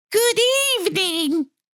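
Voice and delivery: smooth, silky, very high voice. A second monster has just appeared and greets the narrator in Ralph's high, silky voice. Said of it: "he said in a high, silky voice".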